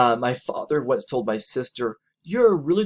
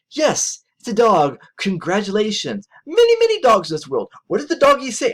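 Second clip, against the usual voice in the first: harsh, critical, high, swooping sarcastic tone; 9 semitones higher, 4 dB louder than usual. Showing a harsh reply to a partner's comment about a dog: acting out a harsh sarcastic reply. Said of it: "that would be really harsh, critical, sarcastic".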